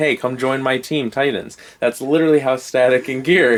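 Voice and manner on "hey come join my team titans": ordinary delivery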